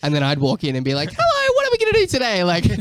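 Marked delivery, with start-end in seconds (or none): 1.1-2.7 chirpy, very high, squeaky voice. Recalling walking into a producer's vocal session one day, Mickey Mouse voice. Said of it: "I went like Mickey Mouse all of a sudden".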